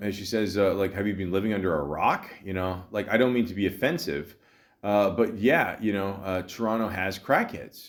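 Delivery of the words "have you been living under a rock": ordinary delivery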